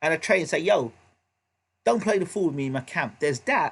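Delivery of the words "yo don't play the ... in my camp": ordinary delivery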